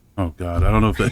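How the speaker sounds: plain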